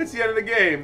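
high, loud, mock triumphant relieved cheer. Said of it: "I'm like".

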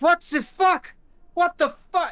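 high, loud panicked shouting.

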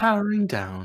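cartoon care-robot voice. Talking to friends, the speaker does Baymax's voice. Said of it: "Didn't know I could do Baymax's voice".

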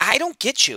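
soft-spoken, quiet, pitched very high. Kelly answers Paul, who has glanced over disgustedly: said quietly. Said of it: "Kelly said quietly".

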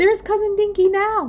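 very high, very loud calling out. Spotting a relative's glider in the sky, one family member shouts. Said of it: "shouted Tom".

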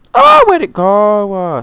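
very high, very loud, drawn-out stretched shriek. Talking to viewers on camera while recording, screaming. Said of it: "Sorry for screaming".

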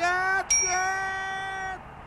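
high yell, way up in pitch, not shrill. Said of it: "Чё орёшь-то?".

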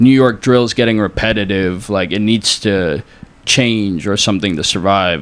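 ordinary talk

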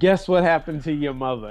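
words cackled out, cackling throughout. Retelling the sister's early-morning FaceTime call, imitating sister cackling. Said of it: "she's cackling".

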